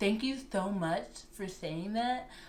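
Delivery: very quiet, soft-spoken, understated delivery. The speaker does an impression of a person: Matt impression. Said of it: "That's my impression of Matt".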